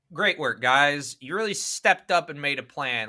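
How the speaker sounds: mocking, dry sarcastic tone. Reviewing whether the previous five steps work, turning sarcastic. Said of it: "put on my sarcastic hat".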